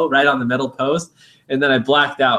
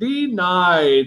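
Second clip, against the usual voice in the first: high-pitched robot voice, sounding like a machine; 5 semitones higher than usual. Retelling posing as a ticket scanner in a booth: imitating a robot voice. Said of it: "And I'd be like the robot".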